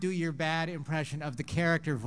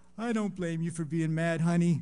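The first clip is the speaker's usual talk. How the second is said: ashamed, sheepish, sorry-sounding delivery; 4 dB louder than usual. Retelling a cartoon scene and voicing Homer's reply: mock-ashamed Homer voice.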